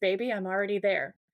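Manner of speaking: put-on evil, menacing tone. Retelling a villain's reply to "go to hell": imitating an evil tone. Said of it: "so evil".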